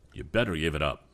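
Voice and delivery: ordinary talk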